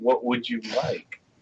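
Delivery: alluring, sultry tone. Speaking as a character in a tabletop game after a natural 20, most seductive voice. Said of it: "in my most seductive voice".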